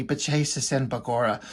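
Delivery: soft, hushed half-whisper under the breath. Retelling a phrase said to oneself when something crazy happens: imitating own half-whisper. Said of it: "I'd just kind of whisper to myself".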